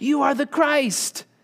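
high, ringing, proclaiming shout. Showing how the confession should be proclaimed: shouting the confession. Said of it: "You want to shout it in that same way".

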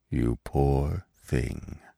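very low, softly spoken murmur. After a long, sad look at Gobo, the old stag speaks to him at last, softly. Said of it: "he said softly at last".

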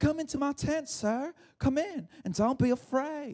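put-on American Southern belle accent. Retelling a Bible story, Jael speaks to a fleeing man, in a Southern belle accent. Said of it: "I gave her a southern bell accent".

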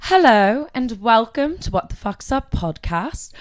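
fake British accent. Retrying the podcast's opening greeting, now in a fake British accent. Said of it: "I'm gonna be British now".

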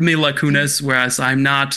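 ordinary talk, nothing marked

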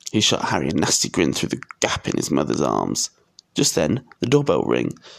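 plain

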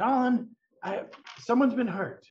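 very high, projected calling voice. Voicing a character calling up through a trap door: calling down from below. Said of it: "Erky calls down".

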